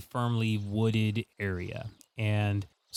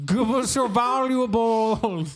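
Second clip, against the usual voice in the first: shouting, higher pitched and louder; 12 semitones higher, 7 dB louder than usual. Voicing swamp spirits who surround the boat: yelling swamp spirits. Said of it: "yelling at you in their different, uh, rid-, uh, their different voices".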